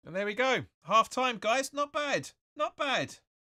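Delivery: happy high cheer.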